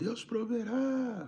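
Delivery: very high shout, called out loudly. Retelling how a man on the street called out: imitating a man shouting. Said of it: "o cara gritou assim".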